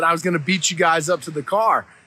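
normal talking voice

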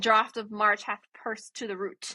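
normal talking voice

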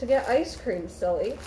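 ordinary delivery

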